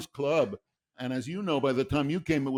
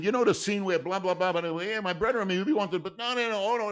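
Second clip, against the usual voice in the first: put-on Brooklyn accent, high and griping; 6 semitones higher than usual. Speaker retells a writer complaining about Casablanca, imitating a Brooklyn accent. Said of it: "he had this Brooklyn accent".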